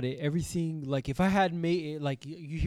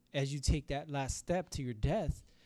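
ordinary delivery

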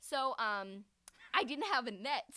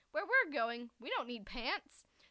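ordinary talk

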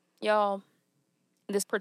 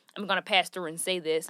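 normal talking voice

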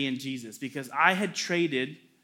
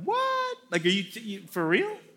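high, stammering, stumbling, stunned disbelief; 5 semitones higher than usual. Retelling hearing "I think we should break up": imitating own past shock. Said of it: "so shocked".

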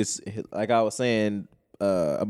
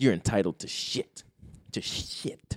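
whispered, angry, furious delivery; 7 dB quieter than usual. Retelling what an angry man told her: imitating an angry man. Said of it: "He was pissed".

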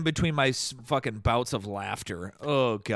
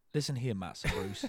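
put-on London accent, lower and quieter; 5 semitones lower, 8 dB quieter than usual. Doing a voice after being asked if they remember Michael Caine: Michael Caine voice. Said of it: "Remember Michael Caine?".

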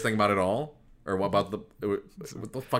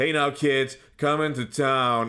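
monotone, flat, deadpan announcer delivery without enthusiasm; 4 semitones higher, 4 dB louder than usual. Mocking a friend's unconvincing commercial read: imitating Steve's flat Shatner-style read. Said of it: "You were just".

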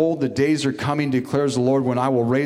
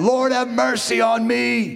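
put-on crying out, much slower; 10 semitones higher than usual. Preaching on a blind beggar's story, imitating Bartimaeus crying out to Jesus. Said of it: "He's crying out".

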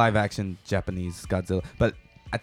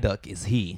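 nerdy put-on voice, lower; 3 semitones lower, 3 dB quieter than usual. Retelling what a Pokemon expert on set said: nerd voice. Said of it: "make a nerd voice just for comedic effect".

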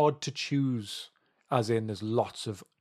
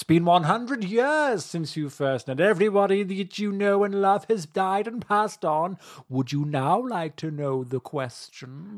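put-on creepy voice, higher and louder; 8 semitones higher, 6 dB louder than usual. Voicing a creepy fellow met behind many doors: G-Man voice. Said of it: "I think it's more like the G-Man".

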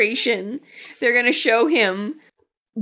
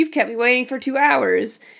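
ordinary delivery

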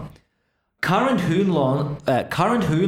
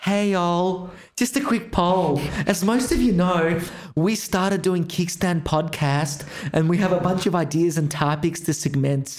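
mock American-sounding accent impersonation. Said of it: "this is me doing my best impersonation of what ours sounds like".

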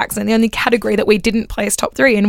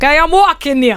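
pitched-up put-on New York accent; 5 semitones higher, 3 dB louder than usual. Naming the least attractive accent, then doing it, New York accent. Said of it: "the least attractive accent to come back was the New York".

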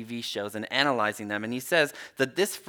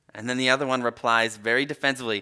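plain

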